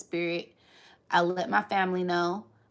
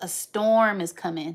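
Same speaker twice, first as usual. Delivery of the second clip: ordinary delivery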